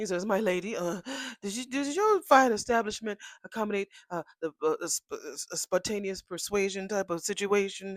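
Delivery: put-on play-acted sloppy drunk man's fumbling, halting speech. Retelling what a man asked a woman at a bar: imitating a drunk man. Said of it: "they both are so pissy drunk".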